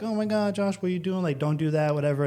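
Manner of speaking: put-on crying, tearful pleading protest. Retelling how family reacted to leaving college: imitating crying family. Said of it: "they were crying".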